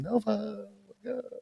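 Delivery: very high, creaky, light voice. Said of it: "like light voice".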